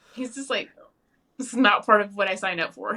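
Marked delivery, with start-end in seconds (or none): none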